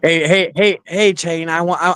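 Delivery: hey said repeatedly, then abruptly cut short. Imitating a friend who asks about hair: imitating Leon. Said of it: "he'd be like".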